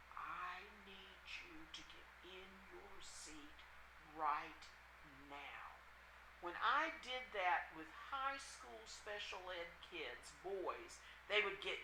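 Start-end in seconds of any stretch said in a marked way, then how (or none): 0.2-5.7 very hushed, quiet, menacing, deadly stern voice. A teacher demonstrating how to get students into their seats: quiet, deadly voice. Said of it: "the quiet, deadly voice".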